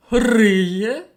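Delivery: loud, astonished, drawn-out drawl on "Риє". Narrating the pig's reply to the chick, surprised and drawn out. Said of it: "Здивовано протягнула свиня".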